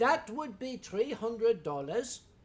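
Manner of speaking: put-on Pennsylvania German accent. Quoting a woman stating a price, in a Pennsylvania German accent. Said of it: "You have to understand the, the, the Pennsylvania German accent".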